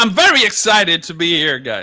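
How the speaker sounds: very loud, booming, high, swooping, thrilled voice. A guest just introduced on the Fan Variety Show greets the hosts, very loud. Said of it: "blew out the audio levels there".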